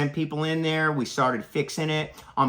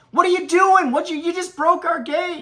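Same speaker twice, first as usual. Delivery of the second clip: loud, very high hollered yell; 6 dB louder than usual. Retelling confronting a driver who broke the campground gate, retelling own yell. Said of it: "and I yelled".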